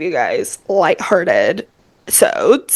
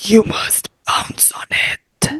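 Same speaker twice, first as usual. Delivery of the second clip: slow, whispered vampire voice. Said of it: "making up things that he would say in that voice".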